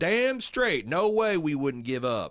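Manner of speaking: loud put-on backwoods hillbilly voice. Quoting a show character described as a hilltop hillbilly: imitating a hillbilly. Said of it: "hilltop hillbilly who says".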